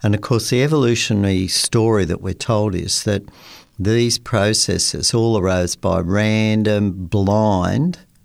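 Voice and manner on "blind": heavy emphasis on the word blind. Describing the evolutionary story he was told, putting stress on blind. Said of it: "emphasis on blind".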